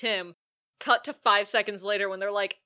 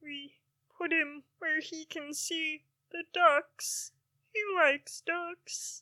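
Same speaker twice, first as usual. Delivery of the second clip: high, slow voice, full of sorrow; 7 semitones higher, 4 dB quieter than usual. Performing the line when asked to: sad Kermit the Frog voice. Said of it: "you have to say it".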